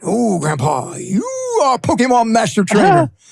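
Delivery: swooping cartoon character voice. A grandfather retells what Lucy said to him, imitating Lucy's cartoon voice. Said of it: "She's talking to me in the cartoon voice".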